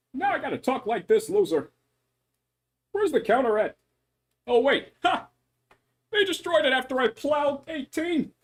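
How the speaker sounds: bouncy, high, fast, swoopy animated cartoon voice. Asked on the spot to do a Krillin voice, Krillin voice. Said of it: "A little bit of my Krillin voice".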